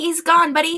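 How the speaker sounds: tiny, small, very high little voice. A voice from up above speaking to buddy, tiny little voice. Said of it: "hear a little voice go".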